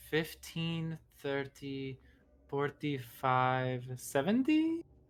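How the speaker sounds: muttered under the breath. As the kobolds charge to attack, a character counts, muttered under her breath. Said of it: "under her breath goes".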